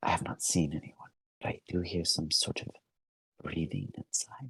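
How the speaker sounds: barely audible, very soft, breathy whisper. Narrator voicing a woman character reporting what she hears, whispering. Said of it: "She whispers".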